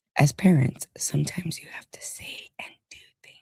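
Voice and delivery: whispered, very quiet reading aloud. The speaker reads a message aloud, whispered reading. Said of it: "Why do I always read in like a whisper voice?".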